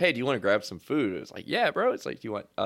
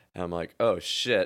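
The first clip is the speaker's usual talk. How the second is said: normal talking voice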